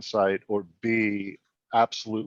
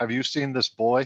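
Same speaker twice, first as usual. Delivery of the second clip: very stern, higher; 3 semitones higher than usual. Asking the first person in a tavern about a missing boy: very stern. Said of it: "and very sternly say".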